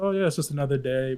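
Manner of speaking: plain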